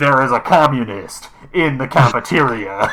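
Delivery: put-on slow announcer voice rattling through crappy old speakers. Narrating sirens going off, voicing Friend Computer over old crappy loudspeakers. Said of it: "It's just like rattling out like".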